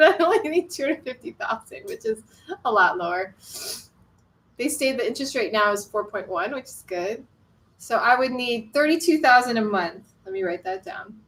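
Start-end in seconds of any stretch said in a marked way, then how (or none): 0.0-3.3 words broken up by laughing throughout. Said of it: "I'm just laughing".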